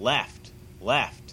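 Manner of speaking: ordinary talk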